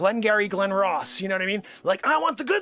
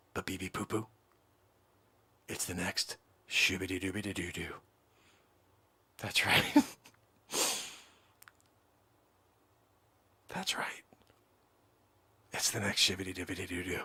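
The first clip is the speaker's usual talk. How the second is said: hushed voice, lower and quieter; 13 semitones lower, 10 dB quieter than usual. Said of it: "I have to keep my voice down".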